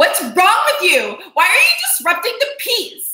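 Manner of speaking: very high, shrill, aggressive swooping tirade. Acting out how the other speaker reacts to someone upset: imitating an aggressive reaction. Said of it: "But not that aggressive".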